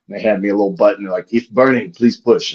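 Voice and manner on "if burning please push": put-on, heavy Japanese accent with broken English. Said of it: "the bad broken Japanese".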